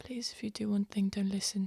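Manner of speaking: urgent, hushed, begging pleading whisper. A player voicing her character speaking to Frenthius, whispering. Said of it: "she's going to look at Frenthius and be like".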